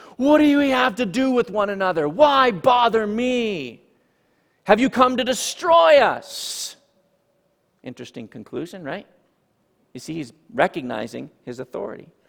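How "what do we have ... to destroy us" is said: loud, high cry at top of lungs, me drawn out. Teaching on a scripture passage, reading the man's words, crying out loudly. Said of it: "cries out with a loud voice at the top of his lungs".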